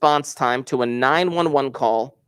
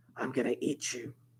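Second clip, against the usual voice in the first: put-on eerie, menacing, very hushed whispered child voice; 14 dB quieter than usual. Telling listeners what your three-year-old said, imitate the three-year-old's creepiest voice. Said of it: "in the creepiest voice".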